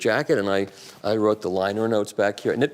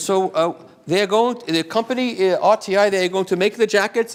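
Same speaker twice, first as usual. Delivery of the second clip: put-on German accent, pitched very high; 9 semitones higher, 3 dB louder than usual. Retelling a phone call, the speaker quotes the caller: put-on German accent. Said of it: "I'll do my German accent".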